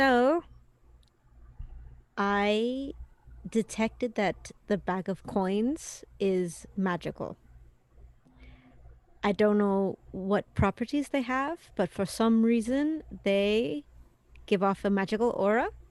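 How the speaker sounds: stage whisper with a drawn-out I. Player speaks as their character Jaina to companions: Jaina's stage whisper. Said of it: "I'm gonna stage whisper".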